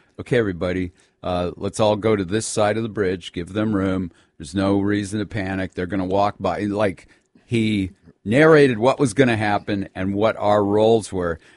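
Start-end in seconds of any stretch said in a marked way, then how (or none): none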